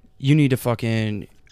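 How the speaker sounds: ordinary talk, nothing marked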